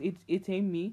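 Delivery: ordinary delivery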